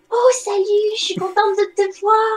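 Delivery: tiny little put-on voice. Greeting fans who want to hug her, she switches to her little voice. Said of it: "je prends ma petite voix".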